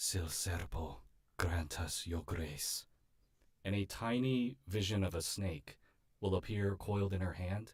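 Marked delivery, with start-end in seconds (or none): 0.0-2.9 half-whispered, hushed voice. A character holds out her hand to cast a healing spell, half-whispered incantation. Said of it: "she holds out her hand and she whispers into it".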